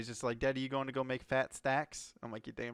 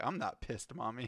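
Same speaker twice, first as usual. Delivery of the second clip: put-on innocent little kid voice, quieter; 4 dB quieter than usual. Retelling a six-year-old's reply during Monopoly: imitating Gavin as an innocent kid. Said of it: "It's just the way he said it, 'cause he's a little six-year-old innocent kid".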